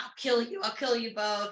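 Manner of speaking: acted, freaked-out, frantic and panicky delivery. Retelling a scene where Lorcan protects her, imitating Lorcan freaking out. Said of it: "freaking out".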